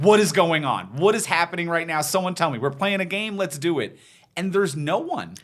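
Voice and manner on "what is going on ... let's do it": eager, pushy, energetic pestering voice, acted. Describing a film role: imitating an energetic pest. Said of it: "energetic pest to be like".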